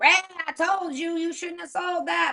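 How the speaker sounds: shrill, very high-pitched woman's voice, hollering. Retelling what a woman in a rocking chair yelled at ray: imitating a woman yelling. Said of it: "She's still yelling".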